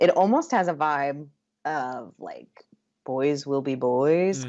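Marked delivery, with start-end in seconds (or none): 3.0-4.4 dark, foreboding, ominous delivery. Quoting a phrase that sums up a scene's vibe, in an ominous tone. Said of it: "I'm saying that in an ominous tone".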